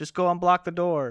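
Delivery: high, very loud shouted yell. Voicing a character during a game scene: yelling. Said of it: "Ingrahill yells".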